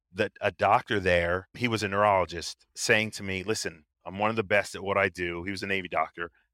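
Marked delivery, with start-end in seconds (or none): none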